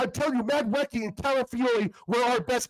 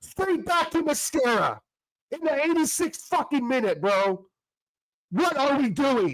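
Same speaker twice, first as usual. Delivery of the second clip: furious, raised, angry outburst. Speaker complaining about a player's pass late in a match: raised angry voice. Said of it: "I'm sorry to raise my voice".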